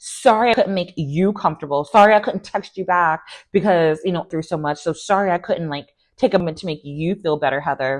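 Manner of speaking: put-on sarcastic, passive-aggressive, sorry-not-sorry tone. Retelling how Tamra apologized to Heather: imitating passive aggressive apology. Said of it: "passive aggressive".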